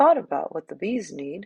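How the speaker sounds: ordinary delivery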